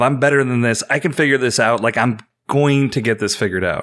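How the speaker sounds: normal talking voice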